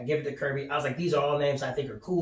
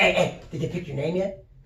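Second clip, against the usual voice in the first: mock-excited, acted-out excitement; 4 semitones higher than usual. Retelling his dad greeting him at home, imitating his excited dad. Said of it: "he's all excited and shit".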